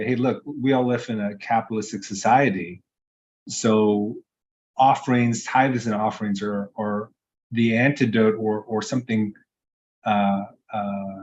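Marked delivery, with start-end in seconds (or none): none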